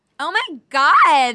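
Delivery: put-on valley girl voice. Asked by a co-host for their best valley girl: valley girl voice. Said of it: "give us your best valley girl".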